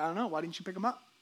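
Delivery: sarcastic, snarky back-talk. Retelling own reply to someone who came up this morning: retelling own snarky reply. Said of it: "I was being snarky".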